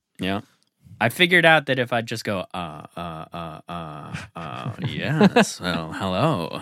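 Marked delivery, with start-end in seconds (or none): 2.5-6.6 put-on halting celebrity voice. Showing a Jeff Goldblum impression that is still in progress. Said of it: "I've been working on my Jeff Goldblum".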